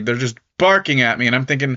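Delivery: ordinary talk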